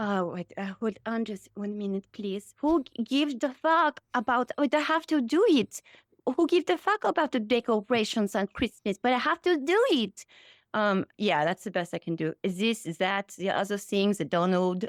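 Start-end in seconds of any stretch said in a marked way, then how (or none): 2.6-10.3 put-on French-sounding accent, pitched high. Asked by the other speaker to do Melania, attempting a French-sounding Melania impression. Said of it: "that's more French".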